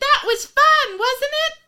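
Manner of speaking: very high, loud, chirpy voice. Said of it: "looking at the audience and being like".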